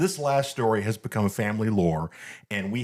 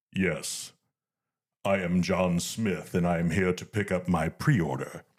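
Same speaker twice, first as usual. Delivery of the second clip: lowered, low sci-fi villain voice; 4 semitones lower than usual. Retelling a man at a store counter asking for his pre-order: Darth Vader voice. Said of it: "comes out perfect in the Vader voice".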